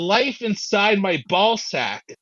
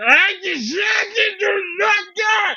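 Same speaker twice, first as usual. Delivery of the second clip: shrill, very high, stretched-out, drawn-out shout; 13 semitones higher than usual. Recounting a near-death experience and what he yelled then, retelling a yell. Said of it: "I'm just yelling like that".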